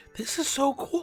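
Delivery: high, excited, thrilled gush.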